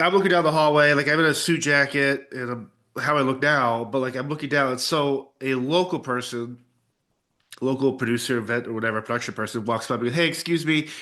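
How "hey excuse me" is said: mock condescending, talking-down voice, higher pitch. Retelling how a production person addressed them: imitating someone speaking as if to a non-english speaker. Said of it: "they say it in a way where it's like they're implying I don't speak English".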